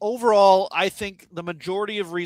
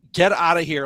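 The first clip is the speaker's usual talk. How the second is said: put-on frantic, panicked, dismissive tone; 4 dB louder than usual. Retelling a comic scene where Eddie brushes off Spidey: imitating panicked Eddie. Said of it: "Eddie is in a panic mode".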